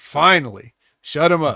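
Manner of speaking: ordinary delivery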